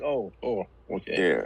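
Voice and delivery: flat unexpressive voice. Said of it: "Why were you so monotone?".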